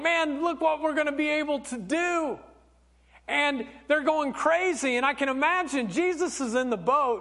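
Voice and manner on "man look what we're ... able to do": mock thrilled, worked-up, eager excitement. Acting out the disciples at the big catch: imitating excited disciples. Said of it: "they begin to start getting so excited, like".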